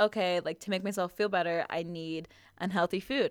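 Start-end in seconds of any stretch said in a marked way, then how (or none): none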